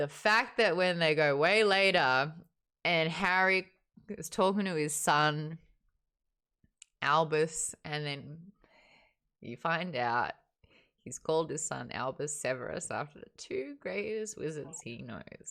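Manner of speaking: voice catching and choking up, close to crying. Telling how the last book's ending moved them: choking up with tears. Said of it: "you can see my eyes are already getting a little".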